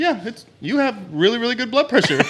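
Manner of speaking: put-on surprised voice. Retelling what she said after taking his blood pressure, retelling a surprised remark. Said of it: "in a surprised voice".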